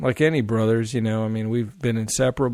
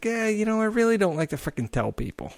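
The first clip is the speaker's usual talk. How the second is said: put-on Boston accent, very high-pitched; 10 semitones higher than usual. Retelling what a golf-playing guy said when asked what he does: Boston accent. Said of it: "Boston accent".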